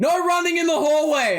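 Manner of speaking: shrill, very high, loud yelled shout. Voicing someone yelling a warning in a hallway: NPC yelling. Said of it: "you hear somebody yell out".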